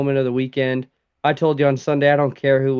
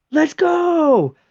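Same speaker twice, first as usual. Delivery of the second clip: mock very high cheering scream, "go" drawn out; 4 dB louder than usual. Recalling yelling at the tv while watching a race; retelling own screaming. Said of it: "I start screaming like".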